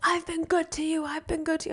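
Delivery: high-pitched yelling, same words said twice. Retelling what a man climbing onto a boat said: imitating someone yelling. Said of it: "yell at him".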